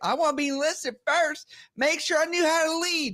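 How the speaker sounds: high, put-on Southern accent. Recalling a girl from the South at boot camp, imitating a Southern accent. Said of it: "she's from the South, she talked like this".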